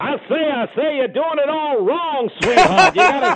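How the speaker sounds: very high cartoon character voice. Doing a quote as Foghorn Leghorn for another speaker: Foghorn Leghorn voice. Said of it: "You know what Foghorn Leghorn says?".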